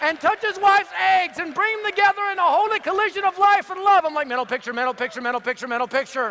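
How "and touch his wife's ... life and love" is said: mock, loud, high, hollered preacher-style scream. Retelling people with hands on your head praying for you: retelling a screamed prayer. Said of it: "they start screaming".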